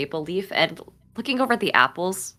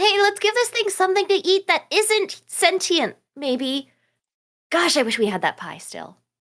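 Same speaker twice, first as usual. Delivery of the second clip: shrill, high-pitched, loud yell. Yelling out in character to everyone, the rats included: yelling out in character. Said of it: "I'm gonna yell out at everyone".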